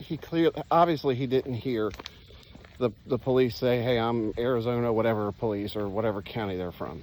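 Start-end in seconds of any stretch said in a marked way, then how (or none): none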